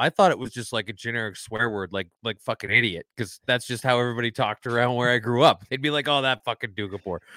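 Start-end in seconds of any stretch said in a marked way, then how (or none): 6.2-7.2 put-on disparaging tone, quieter. Recalling how people talked where the speaker grew up, imitating a disparaging tone. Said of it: "in such a disparaging tone".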